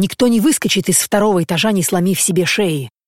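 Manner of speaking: ordinary delivery, nothing marked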